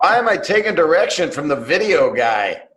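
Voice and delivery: said loudly. Retelling what a comedian said for the cameras on set: imitating someone saying it loudly. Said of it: "he just states the obvious as loud as he can".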